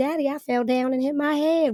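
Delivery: put-on thick Southern accent. Retelling running to their dad as a two-year-old: thick Southern accent. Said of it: "with the thickest Southern accent".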